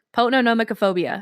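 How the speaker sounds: quick delivery. Repeating a hard phobia name after being asked to say it faster: said faster. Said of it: "Say it faster".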